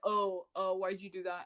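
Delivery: put-on passive-aggressive, petty tone. Retelling an ex's words, imitating a passive-aggressive ex. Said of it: "passive aggressive".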